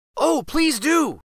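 very high, eager, pleading tone. A narrator reads the children asking their godfather for the story, begging. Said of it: "begged the children".

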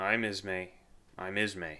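slow, drawn-out mumble, words running together. Reading a man who stumbles aboard, trembling: mumbling.

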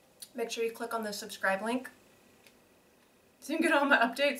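talking through a mouthful while chewing. Recipe video host asking viewers to subscribe; talking while chewing. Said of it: "Sorry, I'm chewing one".

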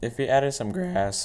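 voice cracking. Speaker commenting on a test run, voice cracking. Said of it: "ooh, voice crack".

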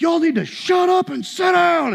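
acted-out, high-pitched scream. Retelling how the man behind them told the group to sit down, imitating someone screaming. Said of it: "he's screaming that now".

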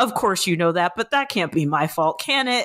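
ordinary talk, nothing marked

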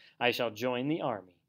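ordinary delivery

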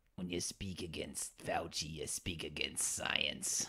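put-on hushed, clumsy New York Italian accent. Asked what accent that was, speaker does a bad Anthony Fauci impression. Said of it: "That was also not a very good accent".

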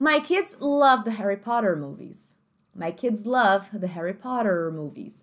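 standard American English accent, slow and careful. Demonstrating how the example sentence is said in an American English accent. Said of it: "no inglês americano a gente falaria essa frase da seguinte forma".

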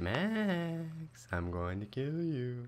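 very slow, menacing, drawn-out, creepy tone. Hunting for a hidden player in a game: creepy menacing voice. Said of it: "That sounded creepy".

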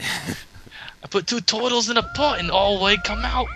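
put-on Cockney accent. Showing how he thinks british people sound, in a cockney impersonation. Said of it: "That was my impersonation of Cockney".

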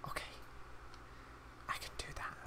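hushed whisper. Playing a game, agreeing to an in-game request: whispering. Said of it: "Don't know why I'm whispering".

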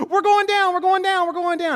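put-on very high, shrill, loud little-girl shriek. Retelling a daughter's reaction to bad plane turbulence, imitating a child screaming. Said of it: "and she screams".

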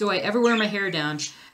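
ordinary delivery

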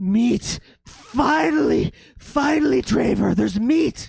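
very high, shrill, very loud screaming ghoul. Voicing ghouls in a story as they scream out: screaming out. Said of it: "they scream out and they say".

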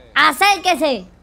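angered voice.

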